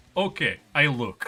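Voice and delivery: put-on heavy Slavic accent with broken English. Retelling what a technician said on arrival: imitating a thick Slavic accent. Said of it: "the thickest, like, Slavic accent".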